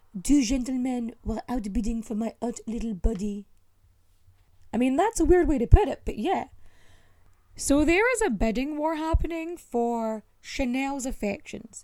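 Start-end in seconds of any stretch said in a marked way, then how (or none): 0.3-3.5 bad, terrible put-on French accent. Reading a quote from a woman, the speaker does a terrible french accent. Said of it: "time for my terrible French impression".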